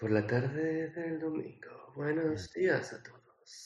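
smooth, silky, velvety, chocolatey radio announcer voice. Playing a radio host opening the podcast, in a silky chocolatey voice. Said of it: "Con una voz eh, chocolatosa".

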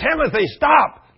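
shrill, very high, loud, urgent scream. A father retells screaming at his son Timothy near an edge: retelling an urgent scream. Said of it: "And I screamed".

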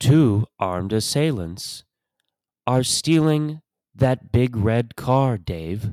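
flat, calm, mechanical delivery. After comparing a cheap door device to HAL 9000, report a car theft in a HAL 9000 impression. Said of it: "That's my impression of HAL".

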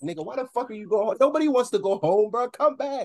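put-on, very high, shrill yell. Retelling how Ryan yelled for the speaker to come back; imitating Ryan yelling. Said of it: "he was yelling at me like".

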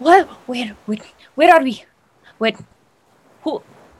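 sputtering, coughing voice. Game master voicing a tabaxi jolting awake in a player's arms, coughing and sputtering. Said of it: "coughing and sputtering and just spewing ocean water".

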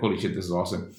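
normal talking voice

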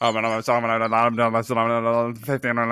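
fast, rattled-off mock auctioneer patter. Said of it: "I've always wanted to be able to do the auctioneer voice".

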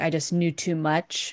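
normal talking voice

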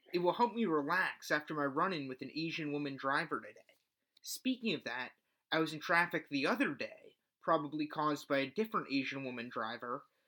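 usual speaking voice

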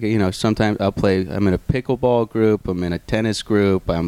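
ordinary delivery

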